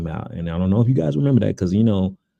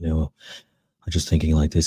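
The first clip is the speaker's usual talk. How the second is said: put-on sleep-inducing voice; 3 semitones lower, 4 dB quieter than usual. Showing how he talked in a conversation that sent you to sleep, sleep-inducing Elon Musk voice. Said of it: "this dude is putting me to sleep".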